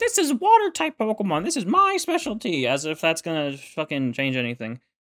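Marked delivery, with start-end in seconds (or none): 0.0-2.7 high, put-on know-it-all bragging tone. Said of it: "her classic".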